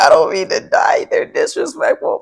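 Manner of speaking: laughing through the words, cracking up mid-sentence. Speaker apologizes to the audience for cracking up, still laughing while talking. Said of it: "I'm cracking up".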